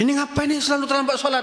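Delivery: angry, very high-pitched scolding tone. Asking how to react to a child always late for prayers, demonstrating a scolding tone. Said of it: "Dengan nada seperti itu".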